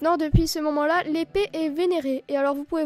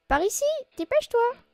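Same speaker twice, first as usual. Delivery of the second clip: put-on high little-girl voice; 8 semitones higher than usual. Voicing a game character's lines aloud: little girl voice. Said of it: "J'essaye de faire la petite voix de fille".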